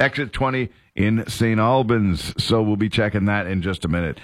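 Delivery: plain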